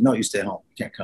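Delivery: ordinary talk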